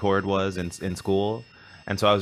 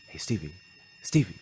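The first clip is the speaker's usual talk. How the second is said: mock muttering under breath, quieter; 4 dB quieter than usual. Retelling calling to Stevie during sound check: retelling saying it under breath. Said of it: "under my breath".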